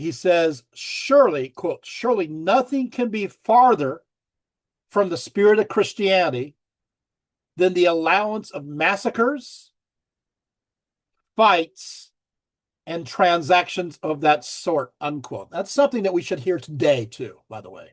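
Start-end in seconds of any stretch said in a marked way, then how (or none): 1.8-14.9 very slow, drawn-out, deliberate reading aloud. Speaker reading a quotation from Scholasticus aloud to listeners, reading very slowly. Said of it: "I'm going to read this very slowly".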